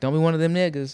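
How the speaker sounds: casual, joking delivery with a drawling twang.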